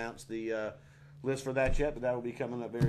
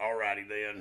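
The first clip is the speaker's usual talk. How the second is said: put-on low grunting Southern voice; 2 semitones lower than usual. Performing an impression after being asked: Karl from Sling Blade voice. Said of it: "I do, uh, Carl from, uh, Sling Blade".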